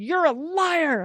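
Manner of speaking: loud, high, salty sailor voice, yelled hard. Following advice to confront an inner voice, retelling a salty-sailor yell. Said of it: "I got my saltiest sailor voice".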